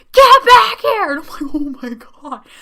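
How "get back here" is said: very high, very loud, shrill angry scream. Describing a mother in a store calling her kid back, retelling a top-of-lungs scream. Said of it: "She starts screaming at the top of her lungs".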